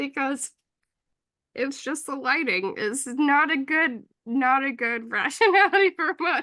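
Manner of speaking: laughing almost to the point of crying. Covering a scandal, speaker comments while almost cry-laughing. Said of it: "I I'm almost cry laughing".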